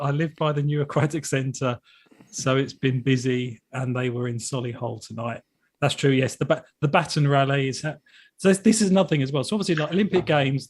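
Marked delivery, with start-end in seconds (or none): none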